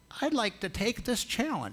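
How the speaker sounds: put-on thin, very high, squeaky old-man voice. Telling a story, the speaker quotes an old man in a squeaky voice. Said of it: "in a kind of squeaky voice".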